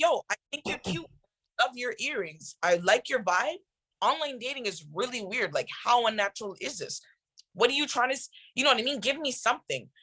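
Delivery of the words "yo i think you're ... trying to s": plain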